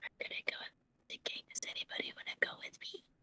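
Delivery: whispered speech. A tabletop game player speaks in character to the whole party: whisper. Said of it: "I'm gonna just whisper to everybody".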